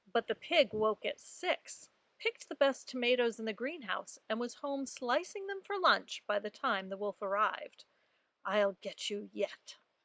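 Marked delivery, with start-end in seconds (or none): 8.4-9.7 slow, hushed, under-the-breath mutter. Narrator reading the wolf's line in a story, muttered under his breath. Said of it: "said the wolf under his breath".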